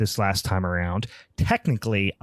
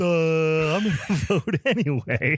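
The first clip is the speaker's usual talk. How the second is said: dopey mocking voice, pitched up, drawn-out "duh"; 7 semitones higher than usual. Complaining about the listeners' vote, doing a mocking impression of the listeners. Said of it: "here's my impression of you guys".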